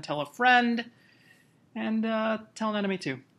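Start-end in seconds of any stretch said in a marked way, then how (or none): 0.0-0.8 high, bright, emphatic tone.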